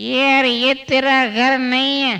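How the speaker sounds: put-on slow, slurred drunk man's voice.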